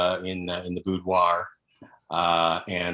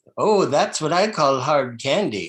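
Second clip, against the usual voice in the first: put-on high elderly grandmother voice; 7 semitones higher, 3 dB louder than usual. Speaker giving an example from a grandmother role play: old grandmother voice. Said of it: "I like a nice grandmother role play".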